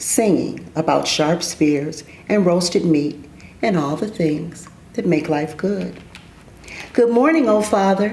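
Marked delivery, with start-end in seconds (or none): 6.9-8.1 bright little voice, much higher. Reading a story aloud, a small voice greets the old, old man: bright little voice. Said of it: "said a bright little voice".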